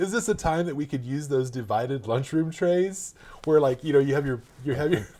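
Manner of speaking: high, loud, fighting back laughter mid-sentence. Retelling what a man suggested to their client, trying not to laugh. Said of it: "I can't say it without laughing".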